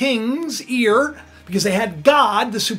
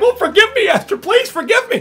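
frantic, desperate pleading in a very high voice; 10 semitones higher, 4 dB louder than usual. Retelling a plea from the story: imitating pleading for his life. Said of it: "pleading for his life".

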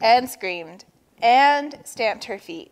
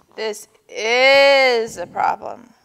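groaning aloud, louder; 5 dB louder than usual. Narrator reads Walrus as Turtle holds her breath, groaning. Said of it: "groaned Walrus".

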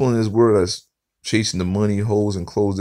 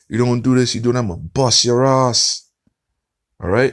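put-on Caribbean accent, stern fatherly voice; 3 semitones higher, 3 dB louder than usual. Retelling a father's warnings to his son, imitating a Caribbean accent. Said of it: "you got that Caribbean accent".

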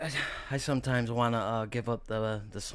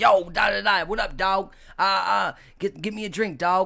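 loud, pitched-up, slangy street talk; 9 semitones higher, 9 dB louder than usual. Retelling a friend who said dog after everything: imitating a friend saying dog. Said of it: "my man used to say dog after everything".

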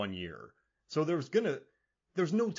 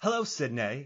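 put-on Australian-sounding accent; 3 semitones higher, 3 dB louder than usual. Speaker tries a California accent on a quoted greeting, coming out in an Australian-sounding accent. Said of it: "No, that's Australian".

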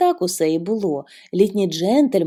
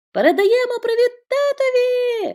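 very high, ringing, loud calling out. Bobbie shouts toward the arriving train as the children wave handkerchiefs. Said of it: "Закричала Бобі".

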